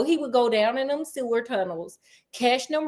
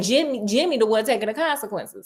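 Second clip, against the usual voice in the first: normal talking voice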